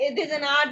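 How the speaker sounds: light German accent on the words an art.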